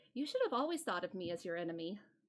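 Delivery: very quiet, hushed, low and quick. A character addresses a player's character: very quiet. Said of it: "says that very quietly".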